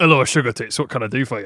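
put-on, fake Scottish accent. Acting out how a business might greet callers: put-on Scottish accent. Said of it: "Scottish as well, apparently".

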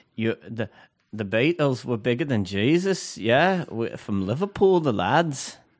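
put-on passable accent with a slight Irish tinge. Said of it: "Can you do [name]?".

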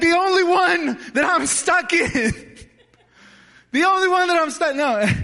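very high, frantic, desperate, panicked yelling. Retelling being stuck in a car door as a kid: retelling own screaming for help. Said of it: "and I'm screaming for help".

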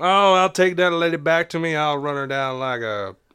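put-on drawling southern US accent, put on. Imitating a character who has a southern drawl: put-on southern drawl. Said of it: "a southern drawl".

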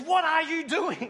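sudden, loud, shrill scream. Retelling a baptism where the lady emerged from the water: imitating a scream. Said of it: "she screams".

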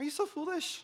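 condescending, patronizing tone, pitched way up. Speaker trying different readings of a Bible verse aloud: condescending. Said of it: "It's even more condescending".

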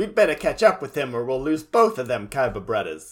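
ordinary delivery

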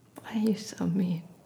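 mock emotional hurt. Asking the other speaker why they're being mean: mock emotional hurt. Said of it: "That was really emotional. That was good acting".

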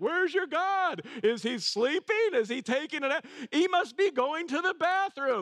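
open mockery, very high jeering taunt. Retelling how he taunts them in a hostile situation: mimicking open mockery. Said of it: "He's openly mocking them".

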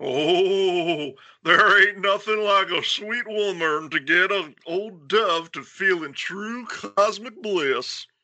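put-on thick Texan accent, drawn-out "oh". Reading a story aloud, voicing Dove speaking to Linda, in Dove's thick southern accent. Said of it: "That's a perfect Texan accent".

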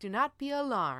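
put-on calm, pleasant robotic voice like an automated announcer. Describing a game's security alert, quoting the announcement: calm, robotic, pleasant voice. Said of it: "it's all in a very calm, robotic, pleasant voice".

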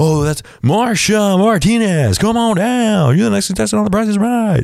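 calling out, voice pitched way up. Recalling a game show as a kid: The Price is Right announcer impression. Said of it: "and it was like".

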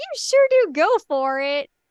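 put-on Midwestern accent. Recapping an anime scene, voicing one girl's reply to the two-timing, Midwestern accent. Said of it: "I gave her a Midwestern accent".

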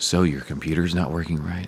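phone-support agent voice. Playing a customer service agent for the group, in a customer service voice. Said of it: "is that your customer service voice?".

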